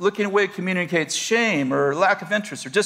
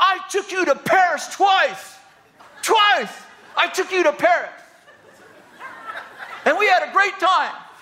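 very high, shrill yell, anger bursting out; 11 semitones higher than usual. Retelling an argument, the man's anger finally overcomes his fear: imitating a man yelling. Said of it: "he yells out".

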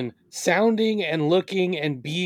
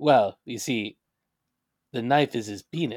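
put-on deadpan serious voice, lower; 6 semitones lower than usual. Quoting a movie line as Charles Bronson: deadpan Charles Bronson impression. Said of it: "deadpan, in all seriousness".

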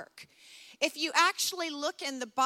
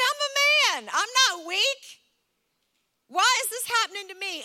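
play-acted loud, furious, angry, indignant tirade; 6 semitones higher, 5 dB louder than usual. Recalling a man furious after being diagnosed with a panic attack, as a mock-furious man. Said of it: "he's furious".

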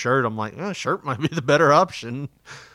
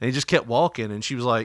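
ordinary delivery

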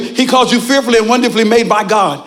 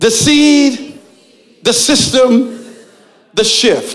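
slow, unhurried, each phrase given its own time. Speaker leading listeners through a repeated three-part phrase, said slow. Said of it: "Say that slow".

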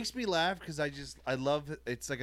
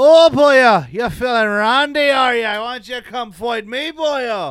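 put-on very loud, high-pitched hollering in an Irish accent; 8 semitones higher, 16 dB louder than usual. Telling how Irish whiskey turns him into Conor McGregor, in a Conor McGregor Irish accent. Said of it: "I just turned into Conor McGregor like".

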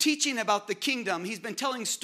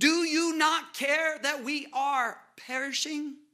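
mock, angry, pitched-up delivery; 5 semitones higher than usual. Preacher acting out the disciples waking him in the storm, with put-on anger. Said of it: "I imagine with some anger in their voice".

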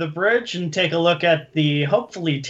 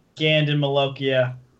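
ordinary talk, nothing marked

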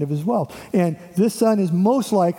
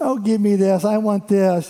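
whiny, bratty, selfish spoiled-brat tone; 3 semitones higher than usual. Describing the son asking his father for his inheritance, in a mock-bratty selfish voice. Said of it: "he would have a bratty voice".

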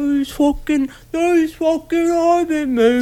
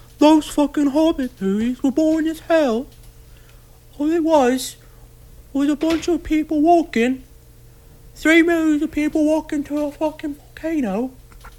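put-on gentle, mild, soft-spoken British accent; 4 dB quieter than usual. Asked to speak up, doing a voice for listeners to describe, in a soft-spoken British voice. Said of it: "Like a soft-spoken, goddamn British".

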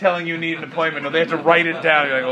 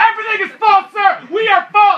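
very high, shrill, raised-voice shouting; 6 dB louder than usual. Recounting an argument, acting out how the other man answered, retelling a yell. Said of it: "why are you yelling?".

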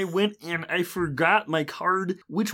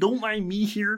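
put-on puppet frog voice; 2 semitones higher than usual. Retelling a game move as a beast sneaking into the jungle: Kermit the Frog voice. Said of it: "I was kinda pretending to be Kermit the Frog".

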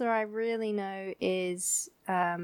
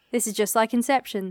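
plain

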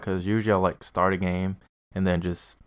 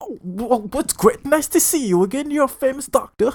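mock bad fake British accent, higher and louder; 5 dB louder than usual. Mocking a game's bad voice acting: imitating bad fake british accent. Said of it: "That's literally how the voice acting is".

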